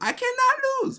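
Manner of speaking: very high, squeaking villain voice. Quoting Frieza mid-conversation, in a high squeaky Frieza voice. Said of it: "high high squeaking voice and everything".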